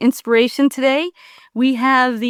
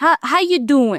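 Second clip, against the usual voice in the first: Philadelphia boxer-style accent. A host greets guest Eric joining the show, Rocky impression. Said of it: "That's my Rocky impression".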